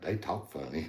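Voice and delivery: put-on soft, small North Carolina Southern accent. Retelling what Ty said at the contest: North Carolina Southern accent. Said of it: "his little North Carolina Southern".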